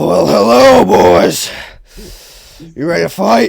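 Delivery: very loud, rough heavyset-man voice. Voicing a fat side character in the game: fat guy voice. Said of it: "let me get a voice for this fat guy".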